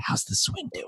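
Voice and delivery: soft, hushed whisper. Imitating the other speaker's late-night message to him: imitating someone whispering. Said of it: "in the whispering voice".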